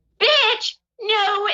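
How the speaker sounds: put-on shrill, very high, drunken heckling yell. Retelling a woman yelling during the speaker's set, imitating a drunk woman yelling. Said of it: "she's drunk and she's yelling at me".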